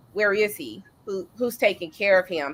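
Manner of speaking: ordinary talk, nothing marked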